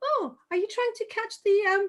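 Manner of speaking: sweetly innocent, swooping, sing-song, very high tone. Retelling a grandmother's remark about curly hair: imitating grandmother, innocent tone. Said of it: "in the most innocent way".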